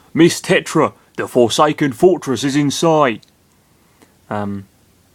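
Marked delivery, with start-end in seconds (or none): 0.1-3.2 put-on loud, generic London Cockney accent. Voicing game dialogue for Gonzo, speaking to Miss Tetra: Gonzo in generic Cockney. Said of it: "that's generic Cockney".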